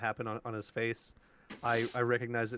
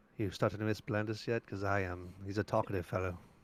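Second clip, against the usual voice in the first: whispered aside; 3 semitones lower than usual. Pulling another character aside during the game to speak: whispering. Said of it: "whisper to him".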